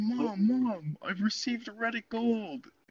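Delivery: very high, slow, weepy, happy, joyful sobbing. Acting out coming home to your mom, imitating sobbing with joy. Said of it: "sobbing tears of joy".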